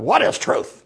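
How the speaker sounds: rattled, flustered, tossed-off delivery. Showing one film reading of the line, flustered Pilate reading. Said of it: "Sometimes it's Pilate being flustered and walking away like".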